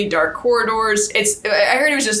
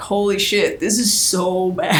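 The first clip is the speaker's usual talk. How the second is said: ordinary talk, nothing marked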